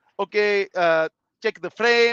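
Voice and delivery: put-on Indian accent, very slow and drawn out. Retelling a friend's trucking test pre-trip: imitating a put-on Indian accent. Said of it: "doing it all in an Indian accent".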